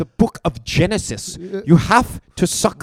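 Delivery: put-on German accent. Trading impressions with friends, asked what he says: Jordan Peterson impression sounding German. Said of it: "No, you sound German".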